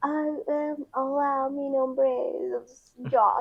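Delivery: put-on high, very slow, babyish sounding-out voice. Imitating someone shyly speaking Spanish: imitating Josh sounding like a baby. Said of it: "he sounds like a baby because he goes like".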